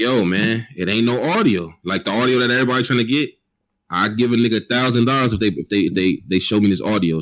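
usual speaking voice

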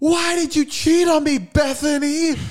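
very high, shrill, drawn-out screaming. Acting out a man's film where he screams at the camera, imitating screaming. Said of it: "him screaming at the camera going".

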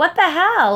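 mock, very high-pitched, loud, teasing joking tone. Retelling what they said to a friend who didn't follow back, joking remark. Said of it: "jokingly was like".

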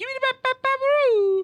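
very high, loud, cartoonish voice. Redoing a line from The Shining: Homer voice. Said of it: "the Homer version kicks into my head".

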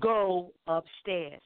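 short, bossy, stern and firm delivery. Retelling being ordered upstairs while tired: retelling a thunder-loud order. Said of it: "they said it so loud it was like thunder".

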